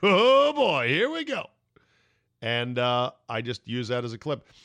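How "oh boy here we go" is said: very high, loud, giddy, jacked-up schoolkid excitement. Retelling how an announcer sounded during a big game: giddy Tony Romo imitation. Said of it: "all giddy like a school kid".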